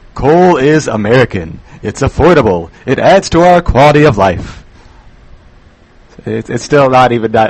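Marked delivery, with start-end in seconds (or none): 0.2-4.6 staged, theatrical, put-on dramatic voice. Reading an industry slogan aloud after being asked to make it hilarious: put-on dramatic voice. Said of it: "all that funny with a dramatic voice".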